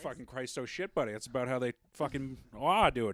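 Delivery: put-on Down East Maine accent. Among others, a speaker does their only impression: Maine accent impression. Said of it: "That's how they talk in Maine".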